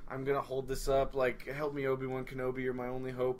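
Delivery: ordinary talk, nothing marked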